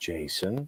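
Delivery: very quiet, soft, gentle delivery. Calming another person down by saying their name: name said softly. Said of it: "you can just say their name softly".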